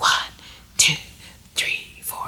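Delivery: soft, breathy whisper. Leading a group in whispering the counts while snapping fingers; whispering. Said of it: "have a whispering tone like this".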